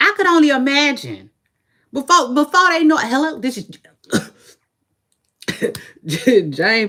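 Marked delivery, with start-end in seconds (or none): 3.0-6.9 dry-throated, parched, weary, worn-out voice. Imagining a woman answering calls from strangers all day, imitating Jane, parched. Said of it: "Be parched as fuck".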